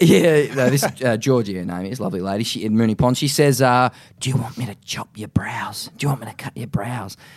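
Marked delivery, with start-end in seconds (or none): 4.2-7.2 hushed, confidential tone just short of a whisper. Retelling the barber leaning into his ear to ask: imitating a hushed voice. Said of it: "it's more like a hush".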